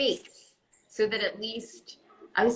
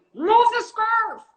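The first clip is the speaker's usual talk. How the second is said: shrill, very high, loud yelling; 12 semitones higher, 8 dB louder than usual. Recalling the voice where she yells about a scarf, retelling her own yell. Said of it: "The one where I'm yelling".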